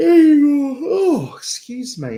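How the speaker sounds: speaking mid-yawn. On a livestream, excusing yourself to viewers mid-yawn: yawning. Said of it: "Yawning on live".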